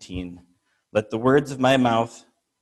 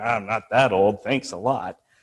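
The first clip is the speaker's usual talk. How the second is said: mumbled, mouth barely opening. Retelling a man's reply after being teased about his age, retelling a mumble. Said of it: "he mumbles like".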